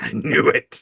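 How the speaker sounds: soft, hushed whisper. Retelling a dying character's last words: imitating a whisper. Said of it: "And she whispers".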